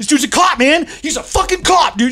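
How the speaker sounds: mock shrill, very high screaming. Retelling a man who started screaming in the speaker's house, imitating someone screaming. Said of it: "He just starts screaming in my house".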